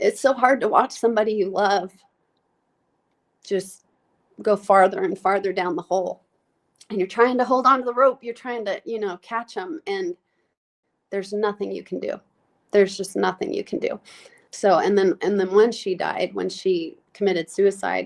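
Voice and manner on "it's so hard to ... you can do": voice on the verge of crying, choking up. Speaking about a loved one who died, choking up, about to cry. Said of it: "Sorry, I'm gonna cry".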